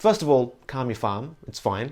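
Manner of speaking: ordinary talk, nothing marked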